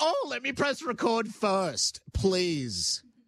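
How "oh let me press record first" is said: mock upset, fake distressed voice, higher. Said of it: "people that upset don't go".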